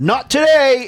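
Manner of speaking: very high-pitched, cocky, smart-aleck tone. Telling a story, the speaker is imitating a smartass kid's retort. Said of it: "And like he was like complete smartass".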